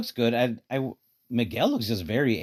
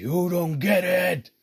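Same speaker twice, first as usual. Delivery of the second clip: angry, very slow, pitched-up delivery; 8 semitones higher than usual. Imitating the angry Spider-Man character Miguel: imitating angry Miguel. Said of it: "he's pissed off".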